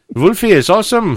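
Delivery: put-on German accent.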